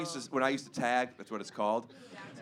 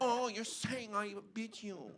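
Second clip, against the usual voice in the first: put-on French accent, soft and pitched up; 9 semitones higher, 8 dB quieter than usual. Joking with friends, the speaker repeats a line in a French accent.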